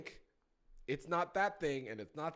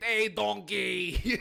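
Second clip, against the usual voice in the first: very loud, rough, pitched-up, badly done cartoon voice; 5 semitones higher, 9 dB louder than usual. Joking about what women want, bad Shrek impression. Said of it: "talking in a Shrek accent".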